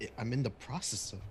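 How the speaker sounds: stumbling, halting mutter under the breath. Answering in character after being told to get dressed: muttering under breath. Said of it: "I would mutter under my breath".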